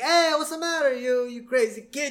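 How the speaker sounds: mock very high, shrill, loud hollered yell. Retelling a cartoon scene where a character yells at Homer: imitating someone yelling. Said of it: "he yells at Homer".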